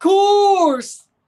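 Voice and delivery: very loud, shrill, high belted outburst. Talking about Club America, the speaker says a phrase in Cenk Uygur voice. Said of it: "in my best Cenk Uygur voice".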